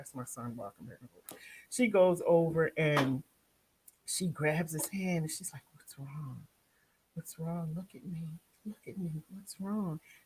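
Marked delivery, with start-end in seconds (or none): 5.7-10.0 put-on gentle, caring, soft, sweet coaxing and pleading. Retelling how Paige grabbed the speaker's son's hand: imitating Paige's sweet plea. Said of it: "She's so sweet".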